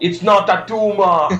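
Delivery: slow, loud, drawn-out hollered bellow. Telling others to hear the film's original version rather than the dub, imitating Arnold shouting. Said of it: "o Arnoldão gritando".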